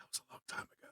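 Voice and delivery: whispered, leaning-in voice. Leaning over to speak privately to another character: whispering in character. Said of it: "I lean over and whisper to Hydralis".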